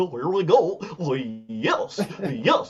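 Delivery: silly cartoon dog voice with wide swooping pitch swings. Asked for a Daniel Bryan impression, the speaker does a Goofy voice instead. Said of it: "I'll do Goofy doing it".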